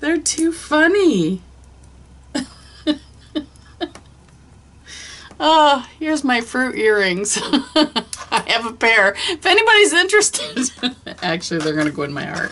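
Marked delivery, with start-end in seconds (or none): 0.0-7.4 high-pitched, giggling through the words while talking. Showing items and cracking up at the fruit earrings, laughing while talking. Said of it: "I don't know why these are cracking me up".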